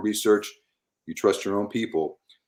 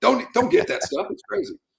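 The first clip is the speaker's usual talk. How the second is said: acted-out yell, pitched much higher. A speaker re-enacts himself in a grocery store aisle, retelling own screaming. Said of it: "I'm the one screaming and yelling".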